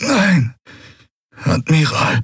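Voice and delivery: groaned through pain. A bleeding first officer answers the admiral's question, groaning. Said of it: "ächzte Quailua".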